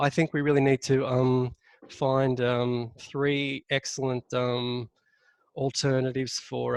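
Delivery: hesitant and halting, umming and ahhing. Showing how filler words weaken a point, hesitant, full of ums. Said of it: "whenever you're umming and ahhing".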